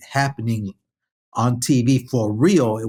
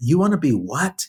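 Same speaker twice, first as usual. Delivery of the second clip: confrontational, daring, challenging tone, pitched up; 5 semitones higher than usual. Speaker retells how their disciplinarian dad answered them: imitating dad's challenging tone. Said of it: "in a challenging tone".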